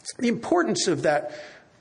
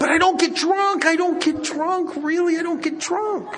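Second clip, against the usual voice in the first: very high, hasty, hedging voice; 10 semitones higher, 4 dB louder than usual. Retelling how the woman started backpedaling: imitating backpedaling. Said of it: "she starts backpedaling".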